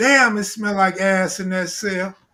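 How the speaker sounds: normal talking voice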